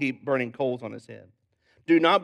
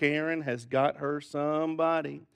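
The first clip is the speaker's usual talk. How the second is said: usual speaking voice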